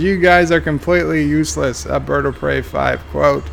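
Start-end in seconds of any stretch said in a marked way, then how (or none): none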